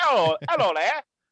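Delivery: put-on British accent. Describing greeting a guest's action figure, the speaker puts on a british accent. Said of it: "I give you like an accent for no reason".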